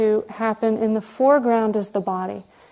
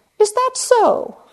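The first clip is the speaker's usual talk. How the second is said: put-on terrible British accent, pitched very high; 13 semitones higher, 5 dB louder than usual. Quoting a British man's self-inquiry question, in a terrible British accent. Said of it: "I always say it to myself in a British accent, which I'm terrible at".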